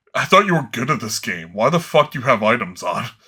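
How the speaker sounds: mock-offended, imitated offended outburst. Retelling how he reacted when the speaker turned items on in a game, imitating an offended friend. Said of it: "then he gets really offended".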